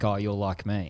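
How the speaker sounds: put-on laughing voice. Retelling a man's answer after admitting being scared, imitating him laughing. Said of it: "And he and he laughed".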